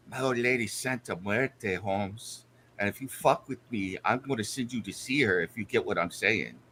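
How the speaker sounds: very low, hushed threatening half-whisper. A player's character leans in to a doubting guy: half-whispering in his ear. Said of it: "I lean in and whisper in his ear".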